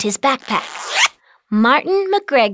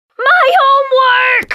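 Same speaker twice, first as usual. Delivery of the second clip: very high, loud shouted cry; 14 semitones higher, 7 dB louder than usual. Narrating a boy realizing his homework went into the washer, yelled. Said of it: "yelled Martin".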